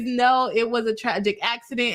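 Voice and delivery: ordinary talk, nothing marked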